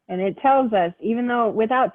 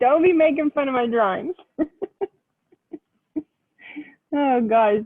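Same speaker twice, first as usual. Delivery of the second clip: talking through laughter, higher; 4 semitones higher than usual. Explaining a drawing to Yasmin, laughing while talking. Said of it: "now it's really gonna be bad 'cause I'm laughing".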